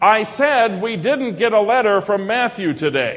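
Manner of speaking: loud, pointed, reproachful, accusing tone. Quoting how she repeats herself after he says huh, loud mock-accusing tone. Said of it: "she says it loudly, as if I need a hearing aid. And there's all kinds of accusation in the tone of voice".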